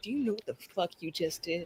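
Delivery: quiet, low-pitched tone. Imagining what Hottie says to the party, backed by hired goons: voicing Hottie. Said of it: "and she's like".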